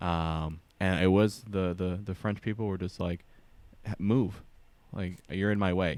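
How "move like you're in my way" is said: put-on blunt, direct, curt tone. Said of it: "we would read it as aggressive".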